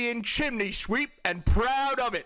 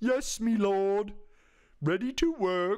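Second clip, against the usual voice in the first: very slow, put-on dim-witted, slack-jawed peasant drawl. Mocking a speaker in a video as a peasant: put-on slack-jawed peasant voice. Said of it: "when people say slack-jawed".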